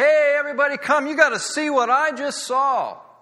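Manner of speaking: very high, loud, excited shout.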